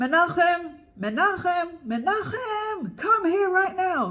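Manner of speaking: high, very loud, drawn-out calling out.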